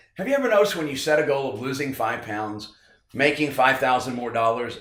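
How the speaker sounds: normal talking voice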